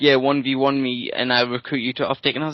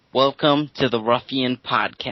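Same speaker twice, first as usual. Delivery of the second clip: put-on generic American accent. Podcast hosts trading accents, saying the show's welcome line: American accent. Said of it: "this is what you gotta say in an American accent".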